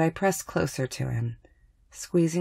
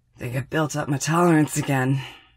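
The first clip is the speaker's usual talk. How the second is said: wheezy voice, wheezing out the words; 4 dB louder than usual. A sick man in bed speaks to the narrator who kissed him, wheezing. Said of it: "he wheezes".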